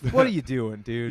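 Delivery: normal talking voice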